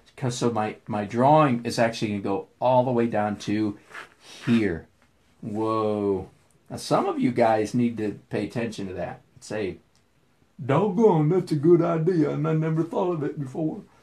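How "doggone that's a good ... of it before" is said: goofy, dim-witted put-on voice, pitched up. Speaker acting out what his audience should say to him, in a stupid voice. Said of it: "I go into stupid voice when I'm imitating".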